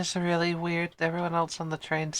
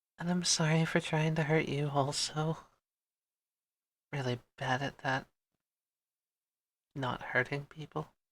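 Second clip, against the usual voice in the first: soft, hushed, apologetic half-whisper; 2 semitones lower, 5 dB quieter than usual. In a role-play scene, a character half-whispers down to Rapunzel's shadow. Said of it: "She whispers down".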